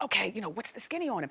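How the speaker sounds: put-on whispering. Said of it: "So we whispered, and I said".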